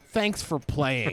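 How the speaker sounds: put-on condescending tone, slowed. Retelling what Jonathan says after beating you at a game, imitating Jonathan's condescension. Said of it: "really condescending".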